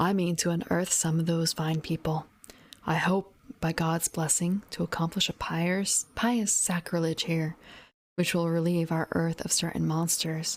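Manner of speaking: plain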